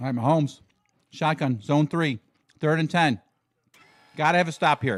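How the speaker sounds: talking while chewing, with a mouthful of food. Doing live play-by-play, talking with a mouthful of food. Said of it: "I'm doing a little play by play with a mouthful of food".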